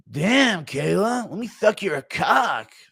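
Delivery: slow, high flirty tone. Play him hitting on Kayla Harrison, as a Bobby Green impression. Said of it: "Impression of Bobby Green hitting on Kayla Harrison".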